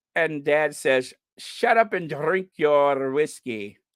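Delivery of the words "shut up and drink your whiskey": attempted put-on Scottish accent. Telling a joke, trying a scottish accent. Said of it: "let me see if I could do a Scottish accent".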